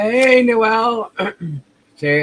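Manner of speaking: voice breaking and pitching up on hello. Greeting people in the audience by name, voice cracking. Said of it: "my voice is cracking".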